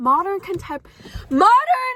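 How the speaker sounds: shouting full blast, very loud and high. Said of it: "Why are you yelling?".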